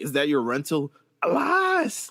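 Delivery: put-on drunken slurred speech. Retelling what a stumbling man asked on the street, imitating drunk slurring. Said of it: "why is he slurring his words then?".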